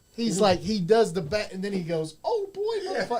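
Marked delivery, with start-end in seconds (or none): 2.3-3.2 imitated cartoon mouse voice. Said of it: "Come in and out of your Mickey Mouse voice".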